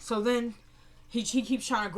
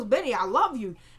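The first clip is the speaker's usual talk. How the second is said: ordinary talk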